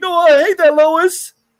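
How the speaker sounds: hot-tempered loud blow-up. Quoting the new Superman scolding Lois: imitating Superman losing his temper. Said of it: "he loses his temper a lot".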